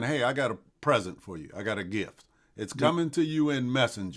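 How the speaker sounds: ordinary talk, nothing marked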